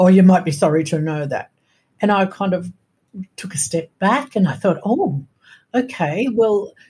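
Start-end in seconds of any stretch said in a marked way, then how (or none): 0.0-1.5 loud, quick, stern, shutting-down tone. Retelling how she answered the speaker's question, imitating a stern answer. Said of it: "she answered very sternly".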